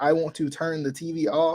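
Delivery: ordinary talk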